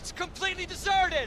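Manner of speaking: loud, high-pitched shout. In the game, arriving at the coordinates, one player calls out: yelling. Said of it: "Why are we yelling?".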